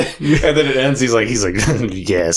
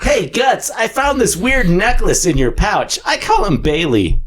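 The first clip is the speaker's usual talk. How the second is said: very high, pitched-up voice; 10 semitones higher than usual. Voicing a line to Guts about a necklace: Puck voice. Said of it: "somebody please cast me as Puck".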